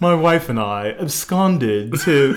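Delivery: slow, affected, self-important, put-on pretentious voice. Talking about drinking wine, the speaker starts a story in a pretentious voice. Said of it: "I'm going to use my pretentious voice right now".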